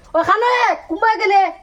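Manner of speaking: calling out high, projected far.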